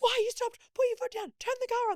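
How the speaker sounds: very high, panicked, frantic high-pitched yelling. Telling how Mikey lost his mind when the car stopped; imitating Mikey's frantic yelling. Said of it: "Losing his mind".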